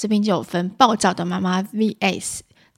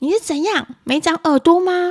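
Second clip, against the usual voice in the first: very high, shrill, loud, hot-tempered irritable scolding; 10 semitones higher, 5 dB louder than usual. Reading an article's examples aloud, imitating an irritable mother. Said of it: "那暴躁的妈妈说".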